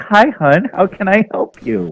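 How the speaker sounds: put-on very high, sweet, kindly little old lady voice. Playing a nice old lady greeting the group: nice old lady voice. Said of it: "this nice old lady walks up, and Sally looks, and she's like".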